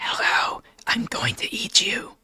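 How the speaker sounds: soft, creepy whispered voice. Reacting to something a viewer posted, giving it a voice: soft, creepy voice. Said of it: "In a soft, creepy voice".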